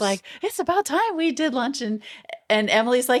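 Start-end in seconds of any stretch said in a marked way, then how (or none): 0.4-1.8 put-on, very high, gushing, excited voice. Retelling a scene where Brooke is invited to lunch: imitating excited Brooke. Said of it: "Brooke is very excited".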